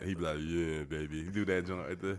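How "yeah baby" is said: dropped, deep comedian voice. Imitating another comedian's closing joke: Aaron Weber's deep voice. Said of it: "So he does the deep voice".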